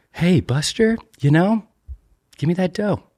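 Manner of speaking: very high-pitched, drawn-out voice. Trying out an impression while joking about a money-laundering bank: Jason Bateman impression. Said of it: "Is that Jason Bateman?".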